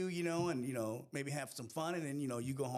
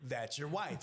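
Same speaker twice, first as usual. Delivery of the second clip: ordinary talk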